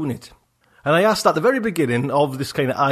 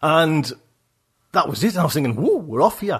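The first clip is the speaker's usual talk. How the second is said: normal talking voice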